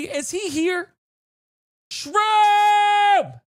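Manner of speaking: very loud, stretched-out, drawn-out excited yell. A streamer checks whether a donor is in the chat, excited yell. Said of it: "Sorry, I didn't mean to yell".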